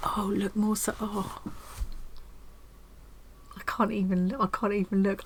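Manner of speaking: getting emotional. Speaker looks over a red and green metallic kit; choked up. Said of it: "I'm getting all choked up again now".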